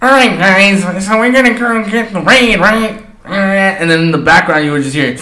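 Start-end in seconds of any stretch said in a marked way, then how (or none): 0.0-3.0 typical high, nerdy voice. Retelling a girl who used to play with them: typical nerd voice. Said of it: "typical nerd like voice thing".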